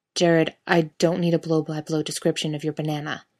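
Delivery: plain reading voice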